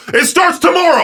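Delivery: shrill, high, thrilled screaming at full voice. Imagining a man on stage at an orchestra show announcing something; screaming. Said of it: "start screaming".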